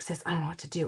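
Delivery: soft, hushed stage whisper under the breath. Retelling talking to a sister beside a nearby kid: imitating own half-whisper. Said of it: "I'm trying to whisper".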